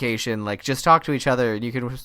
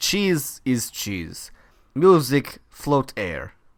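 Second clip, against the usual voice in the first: heavily laid-on, put-on Russian accent. Mimicking a man who just says nonsense, in a fake russian accent. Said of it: "I'm doing Russian. This is not Italian".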